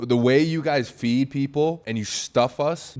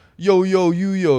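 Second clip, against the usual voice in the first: put-on loud, drawn-out old-school Italian street style; 7 semitones higher, 6 dB louder than usual. Retelling how a girlfriend's grandfather answered: imitating old Italian man's style. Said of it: "in his old Italian, like, style".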